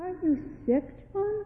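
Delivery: soft, high-pitched, worried and anxious voice. At supper, John's mother asks her son a question, anxious. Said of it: "Asked his mother anxiously".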